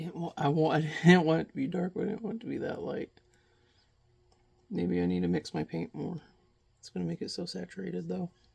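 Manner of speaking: whispering tensely. Speaker talks to the audience while mixing paint, in a tense whisper. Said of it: "I'm whispering because I feel really tense".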